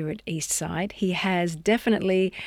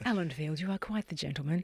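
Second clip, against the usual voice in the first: soft put-on Sunday afternoon radio voice; 2 semitones lower, 8 dB quieter than usual. Repeating a compliment to a guest for the audience: special Sunday afternoon voice. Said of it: "That was my special Sunday afternoon voice".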